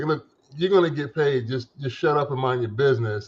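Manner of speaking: normal talking voice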